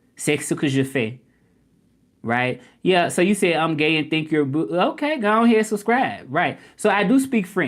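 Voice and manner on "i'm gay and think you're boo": normal talking voice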